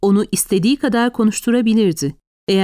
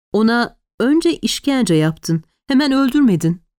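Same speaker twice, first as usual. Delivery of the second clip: plain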